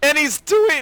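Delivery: voice suddenly breaking up, cracking very high. Commentating a match between players, with the voice cracking mid-sentence. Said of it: "did my voice crack?".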